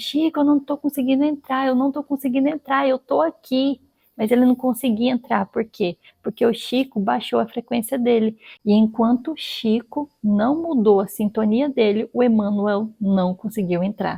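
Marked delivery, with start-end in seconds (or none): 0.0-3.8 high-pitched, put-on calling shout. Retelling a story of someone shouting from outside, unable to get in: imitating someone shouting. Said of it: "lá de fora gritando".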